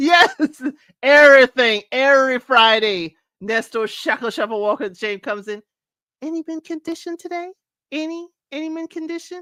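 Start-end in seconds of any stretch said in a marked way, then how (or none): 6.2-9.4 gentle, polite, soft, hushed, high put-on voice. Imitating a woman who comes in every Friday: Oliver Twist-style voice. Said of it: "I just put that voice on".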